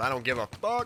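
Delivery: plain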